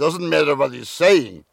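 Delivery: put-on accented European speech. Telling the person asking about his parents, imitating his father's way of talking. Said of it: "a father who talks like this".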